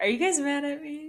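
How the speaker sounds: put-on anxious, unsure tone. Joking about a driver who is leaving his team: imitating Scott Dixon being nervous. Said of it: "He was nervous".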